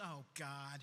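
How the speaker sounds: gasp of dismay. Retelling the night her mom opened her room and found her: retelling mom's dismayed gasp. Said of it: "and she goes".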